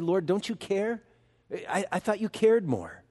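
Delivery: put-on trembling voice. Imagining what Martha said to the Lord: Martha's trembling voice. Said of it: "a trembling voice".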